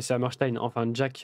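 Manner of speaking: normal talking voice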